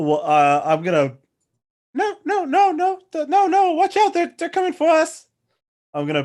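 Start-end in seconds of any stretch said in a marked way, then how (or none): 1.9-5.3 terrible fake female voice, much higher, slower. Asked what his character does in a tabletop game, terrible female voice. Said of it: "That was a terrible female voice".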